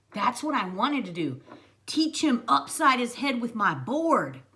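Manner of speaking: ordinary delivery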